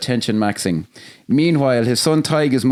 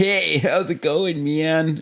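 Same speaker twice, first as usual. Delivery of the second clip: generic American accent, pitched up; 5 semitones higher than usual. Discussing regional accents, giving an example in a generic American accent. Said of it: "there is a generic s- Yank accent where it's like".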